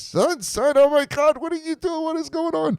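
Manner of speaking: very high, frantic panic, losing control. Retelling a scene, voicing the police officer, imitating a frantic police officer. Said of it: "the police officer's like losing his mind".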